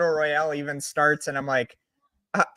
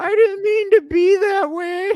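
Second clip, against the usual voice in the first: mock crying child voice, higher and louder; 5 dB louder than usual. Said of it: "And just the fucking crying".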